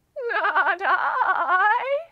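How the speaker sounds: very loud, high, quavering, shaky sheep voice. Retelling the little red hen story, the sheep replies in a shaky sheep voice. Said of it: "the sheep says in her shaky voice".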